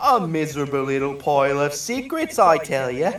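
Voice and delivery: put-on London Cockney British accent. Asked by another speaker to make the quote cockney british; cockney british accent. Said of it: "Make it like Cockney Cockney British".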